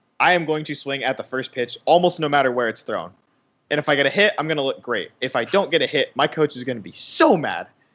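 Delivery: ordinary delivery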